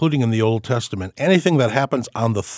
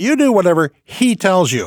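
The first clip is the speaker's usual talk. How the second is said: put-on, pointedly loud remark, raised and pitched up; 7 semitones higher, 4 dB louder than usual. Retelling how Jesus's mother tells the servants, loud enough for Jesus to hear. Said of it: "loud enough for Jesus to hear".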